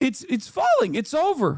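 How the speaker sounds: voice breaking up, cracking with wide swings. Saying the empire is collapsing: voice cracking. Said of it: "My voice is cracking".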